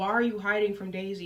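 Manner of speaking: ordinary delivery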